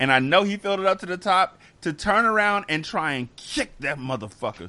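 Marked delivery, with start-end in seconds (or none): 3.4-4.7 words through gritted, clenched teeth, jaw held shut. Telling a story about a full cup, said through clenched teeth. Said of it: "you just said that without opening your teeth".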